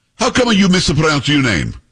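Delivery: put-on heavy Italian accent laid on thick, swooping. Retelling a woman who challenged how the speaker pronounces their name, thick italian accent. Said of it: "a woman comes up to me with a thick Italian accent and says".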